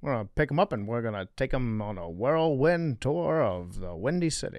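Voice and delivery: put-on soft, old-movie, mid-Atlantic transatlantic accent. Friends riffing on a Roaring Twenties bit, speaking in an old-timey transatlantic accent. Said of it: "transatlantic accent, I believe they call it".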